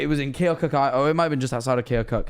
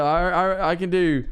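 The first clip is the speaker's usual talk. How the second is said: usual speaking voice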